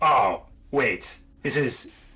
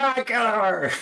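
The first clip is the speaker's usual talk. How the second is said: put-on cheering, much slower; 13 semitones higher than usual. Narrating a fight, voicing Chloe on top of the tower: imitating Chloe cheering her on. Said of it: "Chloe's on top of the tower going like".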